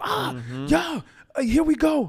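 mock very high, drawn-out, swooping pumped-up hype shout. Retelling getting hype on Sunday as worship leader: imitating own hype yelling. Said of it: "I'm screaming. I'm yelling. I'm like".

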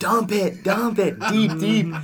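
play-acted, very high, very slow, drawn-out holler. Describing a play, the speaker retells yelling at him, reenacted yelling. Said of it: "I'm just yelling at him".

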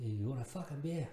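horrible put-on British Irish accent. Speaker offers someone a beer in a horrible british irish accent. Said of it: "That's a horrible British Irish accent".

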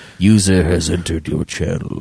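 super deep announcement voice. Retelling the voice a friend's setup uses when someone joins: super deep voice. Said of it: "like super deep voice".

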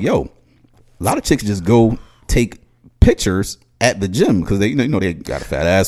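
ordinary talk

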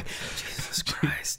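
very quiet, soft whisper under the breath. Imitating a child quietly repeating a phrase she picked up: imitating Dot whispering. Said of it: "She's just whispering".

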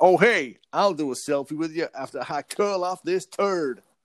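put-on casual American accent. Retelling what a man said while handed toilet paper, in an American accent. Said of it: "he spoke with an American accent".

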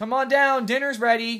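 put-on, very high, loud shouted call. Retelling how his girlfriend yells to him from downstairs: retelling a yell from downstairs.

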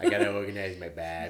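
loud put-on girl's accent, "babies" said as "babbies". Speaker quotes a girl who brought her Barbies to play Doctor, imitating her accent. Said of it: "in her accent".

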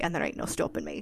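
Scottish-accented voice. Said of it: "I talk like this the rest of the day".

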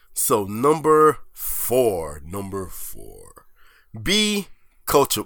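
radio announcer voice. Speaker announces the next numbered point to a listener, in a radio voice. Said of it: "That actually sounded like the radio voice".

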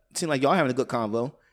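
ordinary talk, nothing marked

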